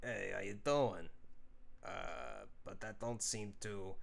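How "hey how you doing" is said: heavy, put-on New York Italian accent. Trying out a voice for a character with a big pipe, thick New York Italian accent. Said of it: "a thick New York Italian accent".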